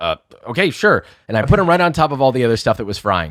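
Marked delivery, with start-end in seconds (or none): 0.0-1.0 caught-out, flustered, panicky voice. Retelling being told to drop food in the fryer; acting out own past panic. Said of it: "I'm like panicking".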